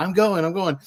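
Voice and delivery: high, frantic, freaking-out pigeon voice. Retelling a movie scene where a pigeon hides from hunters: imitating a freaking-out pigeon. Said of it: "one is, like, freaking out".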